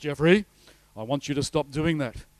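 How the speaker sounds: big, loud, booming delivery. Speaker telling listeners God never shouts to him, imitating a loud God voice. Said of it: "speaking this loud, audible voice".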